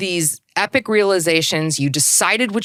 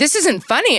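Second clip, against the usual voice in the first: irritated, increasingly angry, pitched-up retort tone; 8 semitones higher than usual. Retelling how a woman got upset at the speaker smiling, imitating someone getting annoyed. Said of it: "get pissed".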